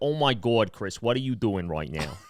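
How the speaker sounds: put-on low, old-school Bronx or Brooklyn accent. Describing an accent, the speaker acts out someone talking in an old-school Bronx or Brooklyn accent. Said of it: "old school Bronx or Brooklyn accent".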